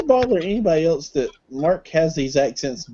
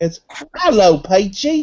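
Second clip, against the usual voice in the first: put-on British accent; 5 semitones higher, 5 dB louder than usual. Showing friends how Peachy's name should be said: British accent. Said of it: "I've got to say it with a British accent".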